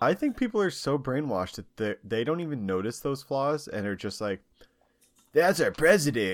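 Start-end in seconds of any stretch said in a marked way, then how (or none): 5.3-6.3 loud, fake American accent, laid on thick. Acting out how brainwashed people react to their president, in a put-on American accent. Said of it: "that's my American Accent. Was that good?".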